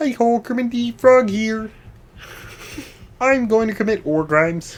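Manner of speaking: very high, thin, goofy voice. Doing a bit as a puppet character: Kermit the Frog voice. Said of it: "if my voice is ever too thin, then it just doesn't sound right".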